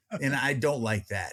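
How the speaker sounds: ordinary talk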